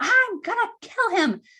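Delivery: very high, slow, drawn-out, enraged, furious shriek. Retelling a call where the husband screamed into the phone: imitating someone screaming. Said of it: "he screamed into the phone".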